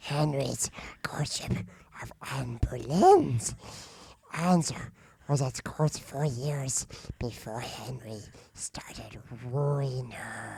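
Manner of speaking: harsh, raspy creature voice. Reading the first two lines of a host's notes aloud, in a Gollum voice. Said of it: "talk like Gollum from Lord of the Rings".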